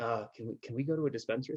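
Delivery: hushed, secretive half-whisper. Imitating visitors who come out to Colorado, in a mock half-whisper. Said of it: "why are you whispering?".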